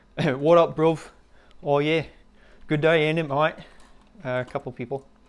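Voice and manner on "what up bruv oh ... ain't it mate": fake, pseudo South London accent. Greeting a couple more people who just joined: pseudo south london accent. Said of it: "my pseudo South London accent".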